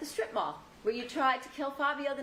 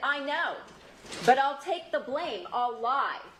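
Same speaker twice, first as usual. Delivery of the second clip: plain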